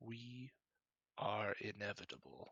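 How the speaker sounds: quiet, hushed voice. Storyteller voicing a woman who stares past the listener at another character, in a hushed tone. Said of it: "just says in a kind of a hushed tone".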